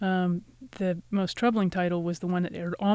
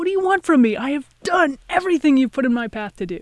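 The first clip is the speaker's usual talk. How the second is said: loud, high-pitched scream; 7 semitones higher, 8 dB louder than usual. Retelling going out on deck in a storm, screaming at God. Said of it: "I'm just screaming at God".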